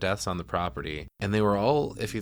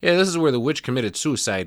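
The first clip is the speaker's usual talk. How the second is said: put-on sudden Chicago accent, raised and pitched up; 5 semitones higher, 5 dB louder than usual. Retelling a character's line about the witch's tree: Chicago accent. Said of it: "the Chicago accent came from when he was like".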